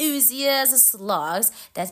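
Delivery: ordinary delivery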